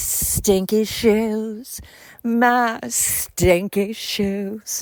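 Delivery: sultry, sexy, sick-sounding voice, every word very drawn out. Recalling a Friends episode where Phoebe has a cold, Phoebe's sexy cold voice. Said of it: "has a sexy voice and she's like".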